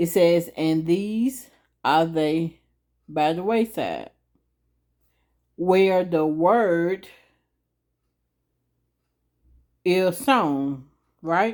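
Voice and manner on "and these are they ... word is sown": reading aloud a little slowly, unhurried. Reading a bible verse aloud to listeners before explaining it: reading a little slowly. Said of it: "I'm gonna read it a little slow".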